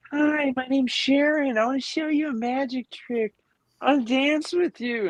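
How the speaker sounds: put-on play-acted very high, tipsy party-woman voice. Retelling what a friend's drunk mom said on meeting: imitating a drunk woman. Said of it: "she'd be shit-faced drunk".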